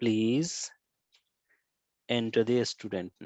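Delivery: polite, courteous delivery.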